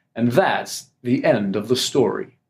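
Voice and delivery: grave, slow, deep news-anchor voice. Explaining how to achieve gravitas when speaking, imitating a newscaster. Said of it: "you hear newscasters say".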